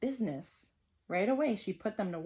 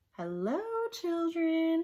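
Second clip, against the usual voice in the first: sugary, sweet, high voice; 8 semitones higher than usual. Reading a story, the teacher greets the children on her return, sweet voice. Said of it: "said in a sweet voice".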